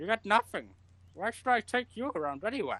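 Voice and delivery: talking through a full mouth of food. Narrator of a second-person scene voicing a speaker as bones crunch: talking with a full mouth. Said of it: "And through like a full mouth".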